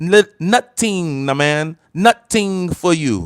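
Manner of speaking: put-on Jamaican accent, spoken at slow, deliberate pace. Speaker announces he'll talk like a Jamaican, then switches to a put-on Jamaican accent. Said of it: "I'm gonna talk like a Jamaican".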